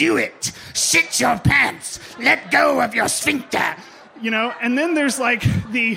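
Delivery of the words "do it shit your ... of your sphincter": drawn-out, rough, raspy voice. Describing the different voices in their head, one is the Emperor Palpatine voice. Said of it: "the Emperor Palpatine voice that's in there going".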